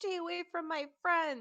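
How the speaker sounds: very high-pitched shouting. Player describing their character's attack on a goblin, yelling. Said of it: "I'm yelling".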